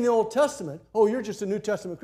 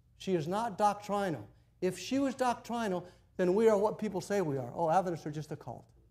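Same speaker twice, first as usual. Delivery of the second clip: plain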